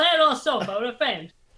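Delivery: high, terrible put-on Spanish accent. Imitating a man who said to play on a sofa: terrible Spanish accent. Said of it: "the awful Spanish accent".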